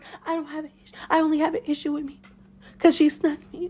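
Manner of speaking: put-on syrupy, sweet, fake-nice tone. Retelling what one arguing cast member said: imitating a put-on sweet voice. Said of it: "she puts on the sweet voice".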